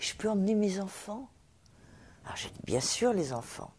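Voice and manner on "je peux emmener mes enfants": put-on shy, very timid, meek, high voice. Retelling how a man asked him a second request, mock-timid, even more timidly. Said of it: "encore plus timidement".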